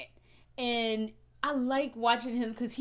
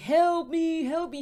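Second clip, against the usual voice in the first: mock screaming, higher and louder; 5 semitones higher, 5 dB louder than usual. Describing monsters from a horror series: imitating monsters screaming for help. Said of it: "the fake people scream".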